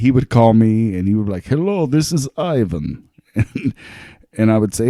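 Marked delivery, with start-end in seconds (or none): 1.5-3.1 bad fake Russian accent, high and slow. Retelling how his brother phoned him in a horrible Russian accent. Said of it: "we would talk in horrible Russian accents".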